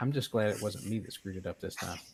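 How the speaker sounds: just-audible half-aloud mutter under the breath. Voicing Overclock's reaction to the team: muttered under his breath, just audible. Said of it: "says almost under his breath, but just loud enough".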